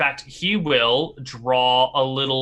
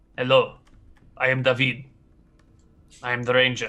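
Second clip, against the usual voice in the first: put-on blasé, indifferent old man voice. Voicing a wise old scout greeting the group: blasé wise old scout. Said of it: "look at you all, sort of blasé".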